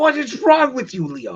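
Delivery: very high, very loud, shrill, swooping yell. Asking Leo what is wrong with him: Brandon voice. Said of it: "summon the power of Brandon right now and just be like".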